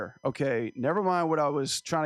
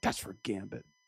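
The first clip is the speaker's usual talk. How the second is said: mock muttering under breath, lower and quieter; 5 semitones lower, 8 dB quieter than usual. Retelling own remark during a scene after farting: imitating muttering under breath. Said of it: "I said that under my lips".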